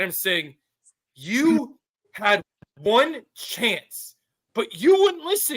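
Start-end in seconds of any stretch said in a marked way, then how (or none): 1.1-5.6 yell, higher. Retelling a fight scene, yelling at the other character: retelling a yelled line. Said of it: "I'm yelling at him".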